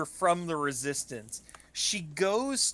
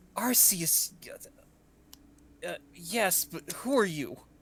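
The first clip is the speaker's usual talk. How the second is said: tearful, fighting back a sob. A stranger out at night answers a Resistance member, choking back a sob. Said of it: "sounds kind of like choking back a sob".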